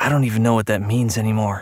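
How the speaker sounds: ordinary delivery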